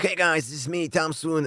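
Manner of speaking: very high, strained, squeezed-throat radio announcer voice. Recalling an old radio-show intro, in a squeezed-throat radio voice. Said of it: "I used to squeeze my throat real hard".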